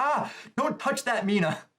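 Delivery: mock frantic, high, panicked freaking-out scream. Describing Mina finding something in Ochiko's costume, Ochiko screaming, retold. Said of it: "She's like screaming like".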